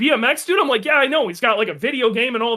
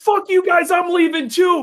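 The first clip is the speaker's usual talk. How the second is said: put-on angry screaming, pitched higher; 7 semitones higher than usual. Retelling a friend screaming at race officials: imitating Dave screaming. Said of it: "Dave's screaming at the guy".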